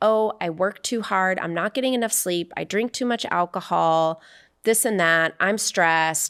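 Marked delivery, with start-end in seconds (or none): none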